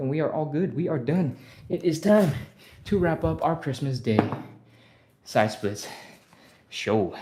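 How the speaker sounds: out of breath, breaking phrases. Wrapping up a Christmas Day side splits show, out of breath. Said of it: "I am super out of breath".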